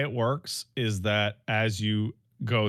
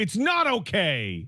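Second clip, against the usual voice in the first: mock upset child voice, higher; 10 semitones higher than usual. Retelling how an upset child answers being comforted: imitating an upset child. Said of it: "he'll be, like, upset".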